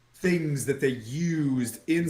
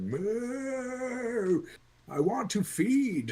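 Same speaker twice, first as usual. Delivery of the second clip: high, very slow, mooing, lowing dog voice; 8 semitones higher than usual. Telling the others what the dog is saying: mooing dog voice. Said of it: "He's like".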